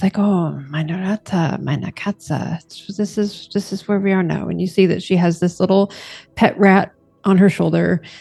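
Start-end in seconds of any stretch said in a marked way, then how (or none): 0.2-4.5 reassuring, soothing tone. Voicing a scientist character talking to her pets: reassuring voice. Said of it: "kind of just reassuring kind of voice".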